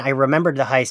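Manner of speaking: usual speaking voice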